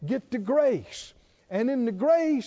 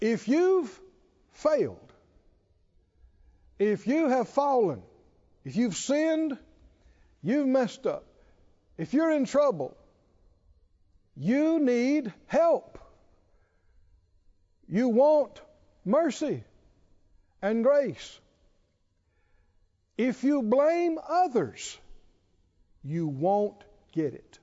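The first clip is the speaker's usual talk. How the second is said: slow, measured, deliberate word-by-word emphasis. Repeating a statement again for the listeners in a Bible study, slowly. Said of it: "I'm going to say it again slowly".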